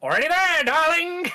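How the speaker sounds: very high, loud, projected, showy theatrical stage voice. Storyteller recounting a scene, voicing a character's line in Alistair voice. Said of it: "I wish I could do the voice of Alistair".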